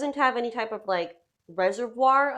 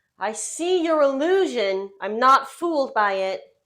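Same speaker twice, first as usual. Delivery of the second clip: loud shout with voice raised; 5 dB louder than usual. Narrating a game scene, the speaker voices a character who makes the save: yelling. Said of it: "you hear him yell".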